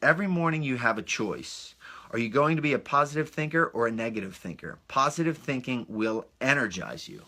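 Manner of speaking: ordinary delivery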